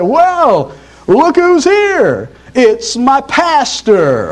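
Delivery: put-on great big booming drunk voice, very slow. Telling a story, quoting a drunk greeting his pastor, in a great big loud voice. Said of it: "in a great big loud voice".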